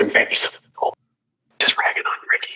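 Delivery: hushed whisper under the breath, aside. Describing a scene, the speaker voices Skate's aside; whispering under his breath. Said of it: "under his breath whispers".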